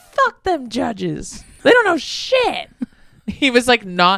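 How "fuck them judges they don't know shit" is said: sudden put-on American accent with swooping pitch. Retelling what he suddenly said about the judges, imitating a sudden American accent. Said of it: "he has an American accent all of a sudden".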